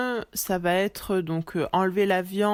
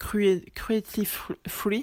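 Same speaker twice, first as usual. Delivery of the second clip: halting English, French accent, half-whispered. Explaining veganism in French, the speaker says an English phrase: French-accented English. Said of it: "pardon pour mon accent anglais".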